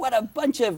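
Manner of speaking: high, loud mock yell of "hocus pocus".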